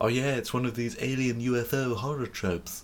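soft, small, high cartoon character voice. Griping about what annoys them, speaker mocks it in a Stewie voice. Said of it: "That's my Stewie voice".

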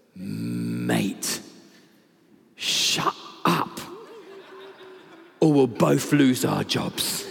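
very low, very slow, swooping deep voice. Telling a joke, a voice from within the line answers, deep voice. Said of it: "a deep voice that comes from within".

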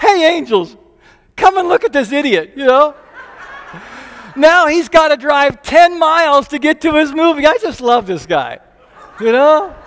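high, loud voice with mock chuckling throughout. Recounting nearly missing a movie, imitating God laughing to the angels. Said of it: "I can just see God laughing and going".

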